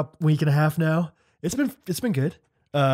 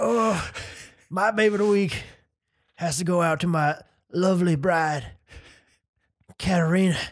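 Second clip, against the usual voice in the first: put-on old man voice, higher pitch; 3 semitones higher than usual. Giving a shout-out to his lovely bride katerina, in a put-on old man voice. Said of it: "I'm trying to be old".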